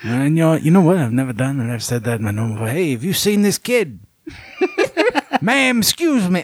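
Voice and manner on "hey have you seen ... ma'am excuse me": dogged, pitched-up, swooping TV detective voice. Acting out asking a woman whether she has seen a boy, turning into Columbo. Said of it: "slowly turning into Columbo".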